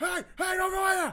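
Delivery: frantic shout, high-pitched and loud.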